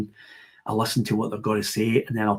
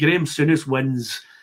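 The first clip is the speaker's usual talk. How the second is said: ordinary talk, nothing marked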